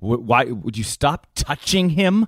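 acted-out angry snap. Retelling a tense moment in a jacuzzi at a party, mock-angry outburst. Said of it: "it was very angry".

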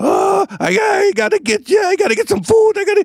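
put-on very high Eastern European accented dog voice. Imitate how he spoke for his own dog running around: an eastern european dog voice. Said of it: "sound like Eastern Europeans".

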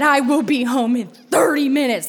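play-acted livid, angry screaming. Retelling her mother's furious phone call about calling the priest, imitating mom screaming. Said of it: "She just kept screaming".

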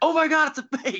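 acted high-pitched shriek of pure thrill. Recalling watching a surprise fake play while his wife slept, retelling his own scream. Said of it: "I'm, like, screaming".

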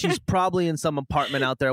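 normal talking voice

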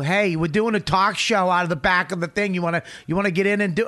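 put-on friendly, casual New York accent. A speaker retells Serpico inviting an old lady onto their show, imitating Serpico's New York accent. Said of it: "with your New York accent".

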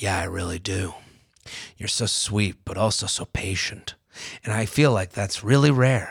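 low, soft, serious tone. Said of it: "His tone changed to a more serious one".

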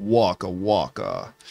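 deep puppet voice. Describing a cutaway where new voice actors did the puppets: deep Fozzie voice. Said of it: "like green kind of voice".

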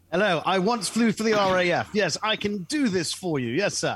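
put-on English accent, high, slow, drawn out. Joking about flying the plane as a former RAF pilot: imitating an English accent. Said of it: "I speak with an English accent".

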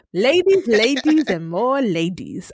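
put-on Nigerian accent. Another speaker asks for it, so doing the Butterscotch impression. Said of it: "do your butterscotch impression now?".

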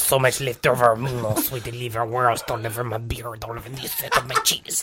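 put-on French accent. In a podcast bit, a host speaks in a mock french accent. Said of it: "anything in a French accent just works".

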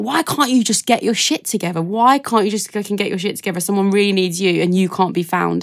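mock big, harsh barking voice. Retelling a massive voice that barks at you: imitating a barking voice. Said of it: "There's this massive voice barking at you".

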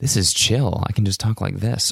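relaxed, easy, smoothed-out talking voice. After changing audio settings, trying out a relaxed speaking voice. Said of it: "more relaxed like that".

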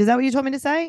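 acted plain, matter-of-fact tone. Retelling what a child on a show asked her mother: imitating a matter-of-fact delivery. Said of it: "She said it very matter-of-factly".

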